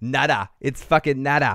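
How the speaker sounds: Boston accent coming through. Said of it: "and so my Boston accent is coming out".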